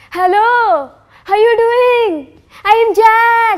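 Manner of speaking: put-on English accent, excited. Reading a story aloud, a character greets a stunned search party: excited, newly acquired english accent. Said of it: "excited proclamations of Hua in his newly acquired accent".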